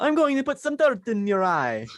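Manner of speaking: high, sing-song Italian accent with big pitch swoops. Asked how Bully Maguire would sound if Italian, the speaker answers: Bully Maguire, Italian accent. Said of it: "Maguire would sound like if he's Italian".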